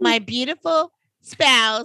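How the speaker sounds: sarcastic game-show contestant voice. Retelling how contestants always introduce themselves on Jeopardy: mock Jeopardy contestant intro. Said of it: "that's what they do in Jeopardy".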